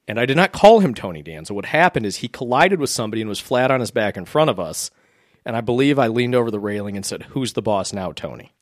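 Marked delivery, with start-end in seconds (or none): 7.3-8.4 very calm mock taunting tone, slower. Recalling taunting a fallen player at a game, retold very calm taunt. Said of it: "Very calm".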